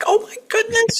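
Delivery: very high, frightened, scared cry. Explaining voice acting, demonstrating a scared character: scared voice. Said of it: "if they're scared, that allows you to change the voice".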